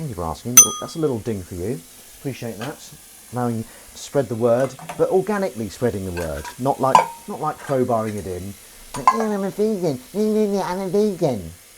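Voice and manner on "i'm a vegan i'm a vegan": very slow, high, taunting, mocking voice. Parodying people who announce that they are vegan, in a mocking voice. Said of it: "that's my um, mocking voice".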